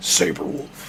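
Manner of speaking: slow, whispered announcer voice.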